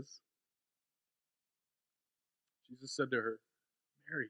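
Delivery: voice catching with emotion. Reading a scripture passage aloud to listeners: choked up with emotion. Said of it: "I get a little choked up here".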